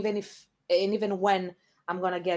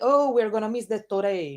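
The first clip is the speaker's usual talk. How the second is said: put-on Japanese accent, higher and louder; 3 semitones higher, 5 dB louder than usual. Showing how they joke with him in English: Japanese accent. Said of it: "English with a Japanese accent".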